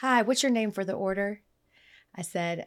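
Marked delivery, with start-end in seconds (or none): none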